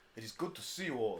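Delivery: put-on fake Middle Eastern accent. Voicing a visitor who greets the party at the door: put-on Middle Eastern accent. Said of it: "why am I making him Middle Eastern?".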